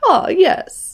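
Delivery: put-on Mid-Atlantic accent. Admiring a classic accent and trying it out: Mid-Atlantic accent. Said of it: "I wish I had that right. accent".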